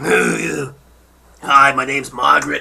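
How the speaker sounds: raspy, rough, creaky, heavy smoker's croaking voice. Joking that her voice has started to sound like a smoker's, smoker's voice. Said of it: "I'm starting to sound like a smoker".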